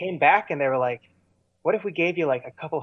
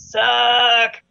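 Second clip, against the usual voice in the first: put-on yell, louder and higher; 9 semitones higher, 8 dB louder than usual. Recalling a crowd booing the band onstage, retelling a heckler's yell. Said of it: "people were like yelling".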